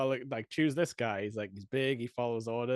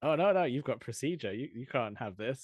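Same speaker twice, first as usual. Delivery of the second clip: put-on fatherly, friendly voice. Retelling a favourite film scene: imitating Stanley Tucci, fatherly and friendly.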